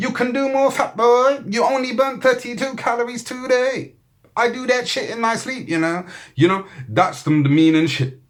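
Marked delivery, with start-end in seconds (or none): 0.0-6.1 very high, put-on Chinese accent. Acting out a smartwatch that talks and insults its owner: put-on chinese accent. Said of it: "I be doing a Chinese accent with it".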